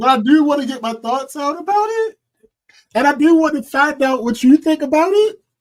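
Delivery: upward inflection at the end of every phrase. Hesitating to bring up a potentially controversial topic, with upward inflection at the end. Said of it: "I'm saying everything with an upward inflection at the end".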